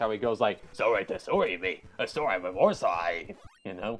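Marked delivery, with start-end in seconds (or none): 0.7-3.4 put-on extremely thick, garbled Australian accent. Describing a voice in the Kirby anime: Blade Knight's thick Australian accent. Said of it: "he has an extremely thick Australian accent".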